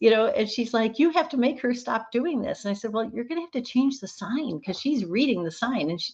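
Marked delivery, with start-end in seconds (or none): 1.0-2.6 play-acted furious, demanding, stern voice. Speaker retells a nurse calling about a patient, imitating a furious nurse. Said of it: "the nurse called me furious".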